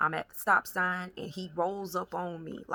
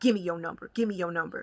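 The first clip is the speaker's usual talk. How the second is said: mock-aggressive tone, faster. Recounting a man demanding the speaker's phone number, imitating an aggressive demand. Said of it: "He was aggressive when he approached me".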